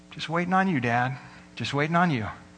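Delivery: settled, even, calm and unhurried tone. Storyteller retells a boy's answer to his father, retelling a calm, quiet reply. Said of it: "Billy just calmly, quietly says".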